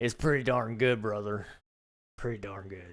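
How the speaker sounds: put-on country Southern US accent. Joking about buying a ranch and farming there, southern accent. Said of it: "As their southern accent".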